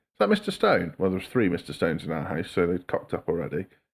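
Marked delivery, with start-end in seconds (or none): 0.2-1.0 cold-caller voice, pitched very high. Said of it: "they'd be like".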